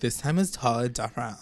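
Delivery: imitated, put-on Californian accent. Retelling what Juliet says every single time: imitating Juliet's Californian accent. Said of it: "I love the accent".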